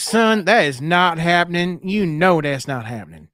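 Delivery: put-on Southern accent with a motherly voice. Imitating the other speaker's mother refusing to buy Legos: Southern accent. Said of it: "just like my mother with that Southern accent".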